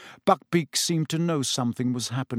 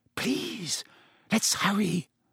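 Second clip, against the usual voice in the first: high, hushed half-whisper under the breath; 7 semitones higher than usual. Hermione urges Harry and Ron as they creep around Hagrid's house: half-whispered. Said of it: "Hermione whispered".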